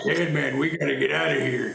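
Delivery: quiet gravelly put-on voice. Showing others the impression that was asked for: quiet Jack Nicholson voice. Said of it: "I do the quiet".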